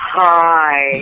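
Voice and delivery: put-on manly voice. Answering a caller on the Manly Show, in a deeper, manlier voice. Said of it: "you have to talk in a deeper".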